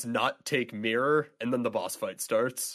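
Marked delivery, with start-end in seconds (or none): 0.1-1.3 monster cry, half-voiced and held back. Retelling a game's jump scare where a possessed Yeti attacks: imitating a possessed Yeti shouting. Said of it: "And she just shouts".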